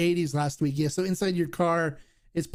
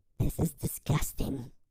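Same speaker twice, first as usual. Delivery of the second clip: put-on muttering under the breath; 4 semitones lower, 5 dB quieter than usual. Retelling what she mutters on seeing the speaker's tequila collection: retelling a mutter under breath. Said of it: "she just kind of mutters under her breath".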